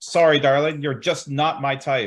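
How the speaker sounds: yelled with a taunting tone.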